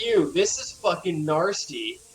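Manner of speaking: ordinary delivery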